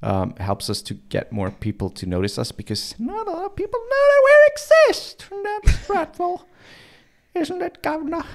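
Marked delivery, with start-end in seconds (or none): 3.0-8.2 put-on sudden British accent, pitched up. Host in character asking the Governor a question, Missus Butterscotch British accent. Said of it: "Why did her accent change? She was suddenly British".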